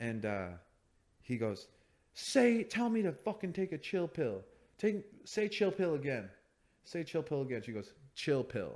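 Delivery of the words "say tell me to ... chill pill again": mock, full-on, high-pitched yelling. Retelling a fight story, acting out the man's yelling. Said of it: "he's just like yelling".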